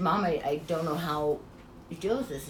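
normal talking voice

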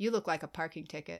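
put-on playful flirty voice, laid on thick. Asked for a best pickup line and flirt mode: put-on flirty pickup-line voice. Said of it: "Give me your best, like, flirt mode".

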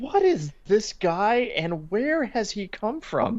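slow, high-pitched, baffled tone. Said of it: "And I'm like".

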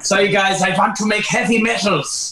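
put-on, high, vaguely Scottish accent. Urged by a listener to keep going with the story: kind-of-Scottish put-on accent. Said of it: "You're doing a good job".

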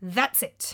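cold fury through clenched teeth. Reading a story aloud, a character confronts an insulting companion: through clenched teeth. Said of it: "I said through clenched teeth".

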